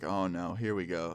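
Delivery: ordinary delivery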